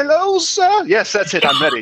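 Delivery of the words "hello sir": put-on very high-pitched old crone voice. Trying out the voice for your disguise before approaching the gates, in a crone's voice. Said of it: "Let me get my crone's voice together".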